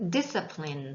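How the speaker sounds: weight on first syllable of discipline. Teaching how to read the word discipline: stress on 'dis' in discipline. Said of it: "첫 번째 아이의 강세를 두시면 되세요".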